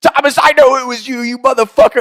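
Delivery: furious screaming, very high and shrill. Retelling a friend's outburst in the dark: imitating someone screaming angrily. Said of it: "he's screaming at me".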